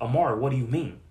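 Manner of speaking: aggressive, very loud, angry voice. Explaining how tone changes meaning, asking Amara a question in an angry, aggressive tone. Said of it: "That shows aggression, as angry".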